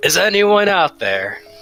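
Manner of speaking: booming, loud, magically amplified shout. Calling out with a magically amplified voice: booming loud voice. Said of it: "make my voice, uh, boom real loud".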